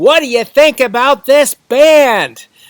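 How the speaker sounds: very loud, high-pitched, stretched-out yell. Showing how he talks to a friend at a bar with music playing, yelling.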